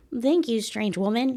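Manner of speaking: high, cartoony little robot voice. Showing the voice they wish they could use for the little robot: cartoony robot voice. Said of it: "a cartoony".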